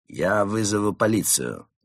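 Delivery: ordinary delivery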